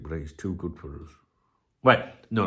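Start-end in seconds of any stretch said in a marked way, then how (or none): 0.0-1.1 very soft, hushed, low, confiding half-whisper. Talking about a centre-back who plays for his team, half-whispering. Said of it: "I'm going to whisper this quietly".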